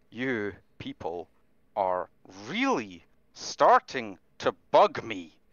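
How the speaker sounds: jaw-clenched, forced out through gritted teeth. A player's character glares at a guy and speaks to him, through gritted teeth. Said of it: "just saying this through gritted teeth".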